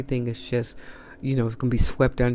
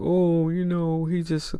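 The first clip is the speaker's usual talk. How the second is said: mock crying, higher; 5 semitones higher than usual. Imitating the accused person's reaction after being confronted: imitating someone crying. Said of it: "crying, like".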